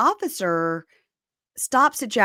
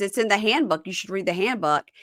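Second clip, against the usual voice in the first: normal talking voice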